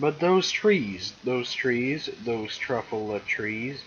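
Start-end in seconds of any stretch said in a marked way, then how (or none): none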